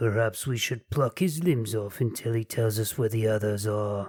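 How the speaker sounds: goblin-like character voice. Game narrator voicing a hobgoblin among approaching monsters, hobgoblin voice. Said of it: "says a hobgoblin".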